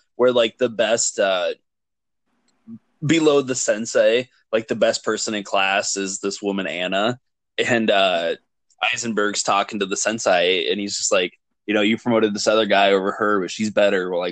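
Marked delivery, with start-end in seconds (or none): none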